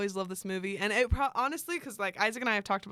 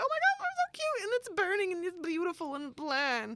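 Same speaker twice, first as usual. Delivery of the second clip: animated cartoon voice, very high and swooping; 10 semitones higher than usual. Describing how she reacts to romantic movies, sounding like a cartoon character. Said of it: "I sounded like a cartoon character right there".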